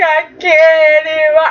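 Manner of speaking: acted crying voice, words pushed out through tears. Recapping a scene, the speaker acts out a character's line: imitating Jill crying. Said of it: "you have Jill like crying like".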